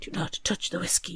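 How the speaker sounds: soft, hushed, low-volume voice. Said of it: "Leo hugs Winter and whispers".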